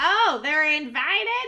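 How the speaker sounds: put-on goblin character voice. A game master voices a goblin dropping from a rafter; goblin voice. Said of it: "another goblin kind of like falls down off like a rafter and just goes".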